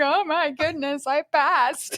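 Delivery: high, weepy, crying through the words. Retelling learning she passed the exam: imitating own past crying.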